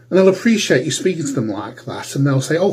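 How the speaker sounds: ordinary talk, nothing marked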